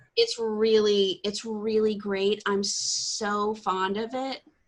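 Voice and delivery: slow, heavily sarcastic, dripping with mockery. Talking about living where D and D counts as witchcraft: dripping sarcasm. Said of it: "she says with dripping sarcasm".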